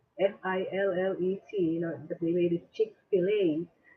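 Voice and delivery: ordinary talk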